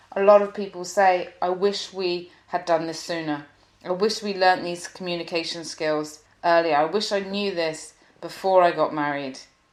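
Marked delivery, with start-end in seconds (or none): none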